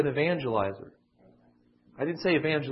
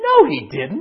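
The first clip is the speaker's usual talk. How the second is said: high, loud mocking tone. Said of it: "I didn't say it in that tone of voice".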